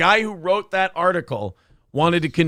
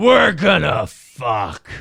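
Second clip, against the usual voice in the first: loud, raised, big declaiming delivery; 5 dB louder than usual. Saying a line the way they like to: Vince McMahon voice. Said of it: "I like to say it like Vince McMahon".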